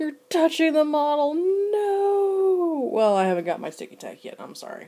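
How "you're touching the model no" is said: very high, slow, drawn-out screaming. Imagining how someone watching this would react: imitating Vince screaming. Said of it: "he's probably screaming at me the whole time".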